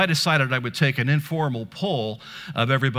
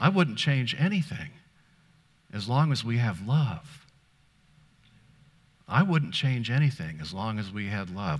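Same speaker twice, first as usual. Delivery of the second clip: mock serene, very calm, sweet voice; 2 semitones lower, 4 dB quieter than usual. Retelling asking Carrie what she'd change about the house, imitating Carrie's calm, sweet voice. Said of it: "said in a very calm, sweet voice".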